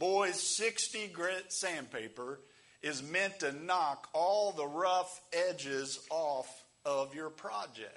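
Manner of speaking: put-on Kentucky accent. Retelling a shop teacher's words: imitating a Kentucky teacher's accent. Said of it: "he was from Kentucky".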